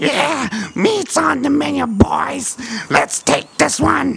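very high, gritty, creaky goblin-like monster rasp. The narrator voices a goblin fighting a lone cleric, goblin voice. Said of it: "you hear the goblin goes".

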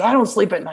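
mock sarcastic. Speaker quoting what they used to tell their parents, retelling a sarcastic remark. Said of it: "I would kind of sarcastically tell my parents".

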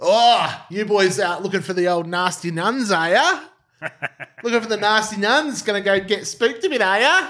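put-on old country bloke voice, pitched high. Retelling how old locals at a pub bar answered the speaker's group, imitating old country town bloke. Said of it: "old country town blokes at the bar like turned around to us and go".

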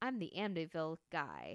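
ordinary talk

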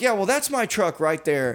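put-on snippy attitude. Retelling talking to a man at a crime scene: giving attitude. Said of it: "I was giving him attitude".

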